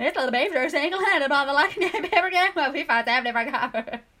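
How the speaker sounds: loud, over-articulated, big chewed words.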